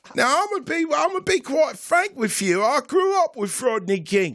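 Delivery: put-on posh British voice, high.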